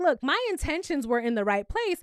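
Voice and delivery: ordinary talk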